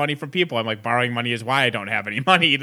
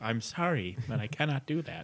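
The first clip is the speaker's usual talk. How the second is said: very quiet, soft, calm robot voice; 11 dB quieter than usual. Imagining being locked out of a phone by HAL, the speaker does HAL robot voice. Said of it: "you were responding in a robot voice".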